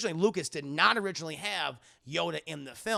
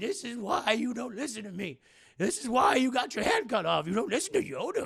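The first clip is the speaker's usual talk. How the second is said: acted, cross, exasperated, high, angry tone; 7 semitones higher than usual. Retelling a scene with Yoda, imitating Yoda scolding angrily. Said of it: "He's very mad".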